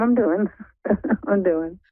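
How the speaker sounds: stressed, overwhelmed voice. Answering a greeting as a caller, sounding stressed and struggling. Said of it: "that sounded like you are struggling right now".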